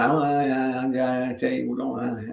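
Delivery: slow flat monotone with a stretched-out I. Imitating the teammate's same interview done over and over: imitating Ted's monotone. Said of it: "just monotone".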